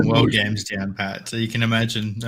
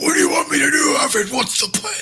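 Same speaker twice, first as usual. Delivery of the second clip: very high, pushed-up put-on caped-hero voice. Acting out Batman in the Batcave asking Alfred: Batman voice. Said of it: "he still uses the Batman voice".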